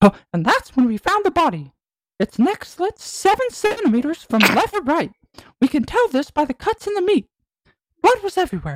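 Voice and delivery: very high pitch bouncing up and down. Improvising a noir murder-scene bit in conversation, in a Mickey Mouse voice. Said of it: "I need to be Mickey".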